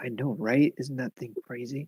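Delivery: hushed half-whisper under the breath. Acting out a scene, the speaker half-whispers a remark to Ellerina: half-whispering. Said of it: "I just whispered to Ellerina".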